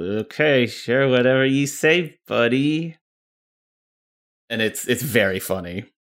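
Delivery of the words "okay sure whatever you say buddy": put-on grudging voice through clenched teeth, higher pitch. Imitating a game recording's female Shepard line: Jennifer Hale through gritted teeth. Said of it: "you can hear Jennifer Hale just kinda gritting her teeth".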